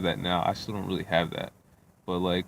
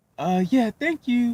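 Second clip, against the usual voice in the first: very high, sweet, innocent book-nerd voice; 6 dB louder than usual. Describing a woman being dropped off, imitating an innocent nerdy voice. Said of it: "she's trying to sound all innocent".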